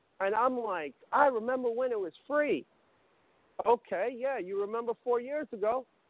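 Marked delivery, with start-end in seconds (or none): none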